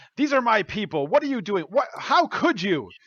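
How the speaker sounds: furious, angry yelling, pitched high. Voicing a character confronting a woman over his people: angry yelling. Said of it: "yelling at her and, like, hitting his fist".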